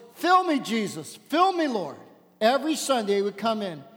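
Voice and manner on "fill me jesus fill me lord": preacher-like calling tone, churchy praying voice. Telling a story about a man in church, retelling his loud prayer. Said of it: "he would stand up and pray in a loud voice".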